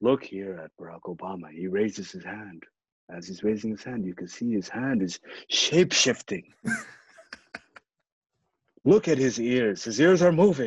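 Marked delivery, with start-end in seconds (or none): 0.0-6.5 low, soft, murmured ASMR-style voice. Describing a video to a listener, trying to talk in an ASMR voice. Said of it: "I'm trying to do it in an ASMR voice".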